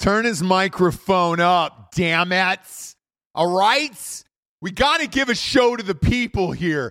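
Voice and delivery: shouting. Demanding that the other speaker's microphone be turned up: yelling. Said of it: "you yelling and making my voice comparatively lower".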